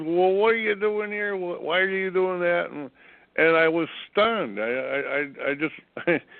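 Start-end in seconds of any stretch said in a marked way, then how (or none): 0.0-2.7 pitched-up, mild, scream-like outburst. Retelling how an initiate reacted to setup help: imitating someone screaming. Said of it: "she started screaming at me at the top of her lungs".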